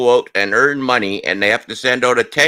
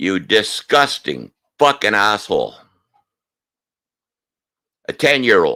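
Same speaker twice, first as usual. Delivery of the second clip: angry, angered delivery; 3 semitones lower than usual. You are addressing Scott directly and say outright that you are angry; sound angry. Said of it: "if I sound angry, that's because I am".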